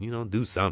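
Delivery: ordinary talk, nothing marked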